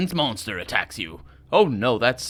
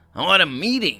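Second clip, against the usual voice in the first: grumpy, grouchy, put-out voice; 4 semitones higher than usual. Voicing a character the narration introduces, in a grumpy voice. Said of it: "speaks in a grumpy voice".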